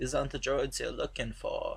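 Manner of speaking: badly murmured, low voice. Explaining the droids, the speaker quotes Obi-Wan; terrible Obi-Wan impression. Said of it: "I'm gonna do a lot of terrible impressions".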